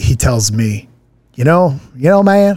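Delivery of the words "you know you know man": put-on thick Alabama accent, higher pitch. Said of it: "He's got a real thick accent".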